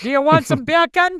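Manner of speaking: very high, loud put-on Jamaican accent. Sharing a fun fact in conversation, demonstrating it in a Jamaican accent. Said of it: "say beer can in a Jamaican accent".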